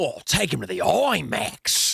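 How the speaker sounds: put-on Australian accent. Recounting what the Uber driver said: Australian accent. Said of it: "He here that in the Australian accent".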